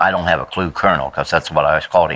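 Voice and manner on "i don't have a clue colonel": plain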